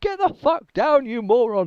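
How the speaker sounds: very high-pitched, loud yelling. Narrating a scene, voice a man's mates as they are yelling at a comrade. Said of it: "his mates now yelling at him".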